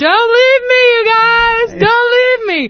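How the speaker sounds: shrill, very high, loud scream. Telling about a man chasing a van through traffic; retelling a scream.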